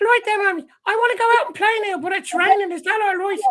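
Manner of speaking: put-on very high little-kid Irish accent. Recalling old tapes of themself as a child talking to mammy, childhood irish accent. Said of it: "I had an Irish accent until I was about seven".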